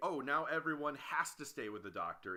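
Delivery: plain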